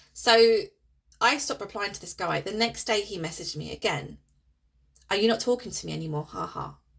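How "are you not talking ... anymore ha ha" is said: light, playful, jokey kidding tone. Retelling a message from a man who was ignored: imitating a jokey, playful message. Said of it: "very jokey, very playful".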